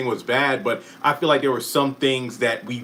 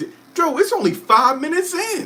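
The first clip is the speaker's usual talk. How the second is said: high-pitched, squealed emotional outburst. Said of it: "and I'm all emotional".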